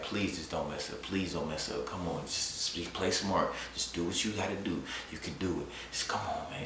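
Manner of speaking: soft, hushed, nervous pleading under the breath. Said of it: "like, so nervous".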